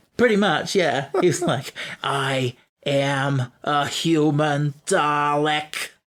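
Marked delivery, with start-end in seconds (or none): 2.0-5.9 slow mock New York accent. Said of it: "now speaks with a New York accent".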